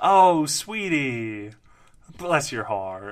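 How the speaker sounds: fake, patronizing, loud sing-song talking down. Teasing another speaker who hates the phrase: mock condescending. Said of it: "Brad's doing that 'cause he knows I hate that".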